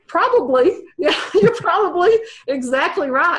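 high-pitched voice, laughing through the words.

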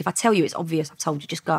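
ordinary talk, nothing marked

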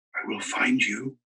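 soft, close half-whisper under the breath. Bertie, lying beside him in the dark, makes a last promise, half-whispering. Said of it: "he whispered".

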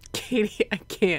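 high, giggly, voice breaking up with laughter. Streamer reacting to Katie's message in the chat, laughing. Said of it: "I'm laughing at Katie's thing in the chat".

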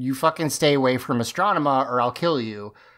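plain

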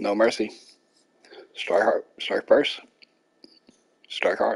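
talking with mouth full of food. Video creator signing off to viewers, talking with mouth full. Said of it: "My mouth's full of cookies".

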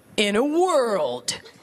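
epic, dramatic movie-trailer announcer voice. Doing an impression of every movie trailer, in a movie-trailer announcer voice. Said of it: "here's my impression of every movie trailer".

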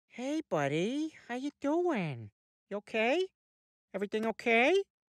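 cautious, slow, careful, soothing tone. Greeting a buddy, being careful not to upset him: careful voice, not to upset. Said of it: "I'm talking like this because I'm being very careful not to upset you".

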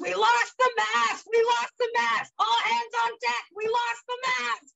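mock very high-pitched alarmed screaming. Retelling an alarm raised on a boat in pouring rain: imitating someone screaming. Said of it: "And then he screams".

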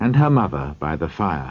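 ordinary delivery

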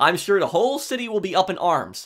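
ordinary talk, nothing marked

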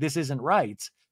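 ordinary talk, nothing marked

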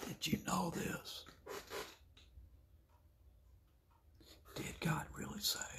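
very soft, hushed, breathy whisper. Acting out little Miss Unaware sitting down beside you: whispering. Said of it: "She's gonna whisper".

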